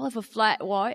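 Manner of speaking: put-on Cockney accent. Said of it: "never with an Australian accent?".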